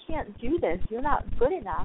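ordinary talk, nothing marked

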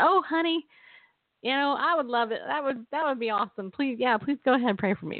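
put-on, laid-on Tennessee accent. Retelling how a woman agreed to be prayed for, imitating a Tennessee accent. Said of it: "in her Tennessee accent".

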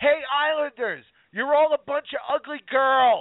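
very high-pitched, drawn-out heckling yell. At a hockey game, retelling how she heckled the islanders: retelling her yelling heckle. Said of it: "she starts yelling".

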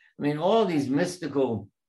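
ordinary talk, nothing marked

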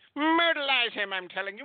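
very high eighties old-cartoon style voice. Retelling a wrestling match, act out the man's shout as a Heyman impression like a 1980s cartoon character. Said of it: "sounded like a cartoon character from the 1980s".

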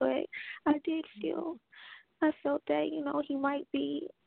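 crying while talking. Telling another speaker her feelings about a man, crying while talking. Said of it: "I just keep crying".

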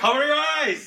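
shrill, very high-pitched, loud yell. Voicing Dante as a flash goes off: yelling. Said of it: "Dante just yells".

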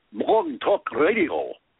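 British lady voice turning Scottish. Speaker imitates the lady who answers the phone: imitating a lady's british accent. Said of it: "went from British to Scottish all of a sudden".

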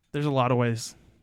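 ordinary talk

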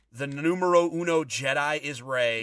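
ordinary talk, nothing marked

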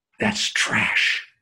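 private, hushed stage whisper. Retelling what a father whispered in the ear: imitating a whisper. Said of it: "he whispered in my ear".

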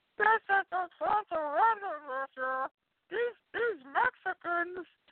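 put-on very high, drawn-out, crazy-sounding bad audio. Mocking a podcaster who recorded from his car: mocking Masked Maniac's crazy-sounding audio. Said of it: "I used to make fun of the fucking Masked Maniac".

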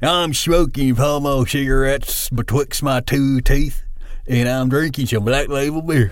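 put-on small-town Arkansas accent, cool-dude voice. Showing the voice he talks in while driving around, small-town Arkansas dude voice. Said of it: "I'm talking like this dude right here".

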